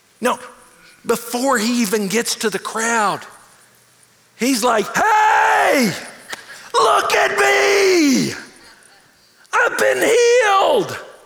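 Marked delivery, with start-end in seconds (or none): 5.0-11.0 play-acted joyful cry, very high, very slow, drawn-out. Retelling a healed man coming back to thank, crying out loudly. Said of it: "He's crying out".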